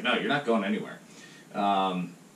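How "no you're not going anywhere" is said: usual speaking voice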